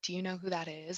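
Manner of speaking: hushed whisper. Retelling store workers asking about a celebrity nearby, whispering. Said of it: "whispering like".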